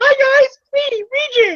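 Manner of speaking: thin, very high-pitched voice. Imagining how a character would greet the guys, use a Mike Tyson kind of voice. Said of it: "I just imagine that kind of voice".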